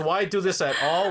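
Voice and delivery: ordinary delivery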